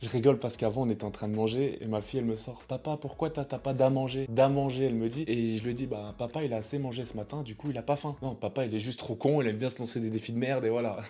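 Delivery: soft, hushed voice. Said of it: "je vais pas parler trop fort".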